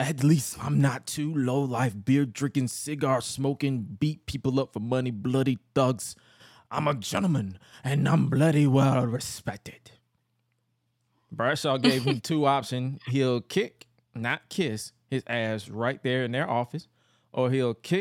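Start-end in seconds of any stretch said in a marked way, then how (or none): 0.0-9.9 badly butchered English accent. Recounting a scene, the speaker voices William Regal in a bad William Regal impression. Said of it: "I'm about to butcher the hell out of the English accent".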